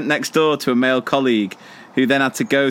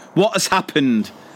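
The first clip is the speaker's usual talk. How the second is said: put-on strict, stern classroom-teacher tone; 3 semitones higher than usual. A teacher retells questioning a blubbering child at the door, stern teacher voice. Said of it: "In a stern teacher voice".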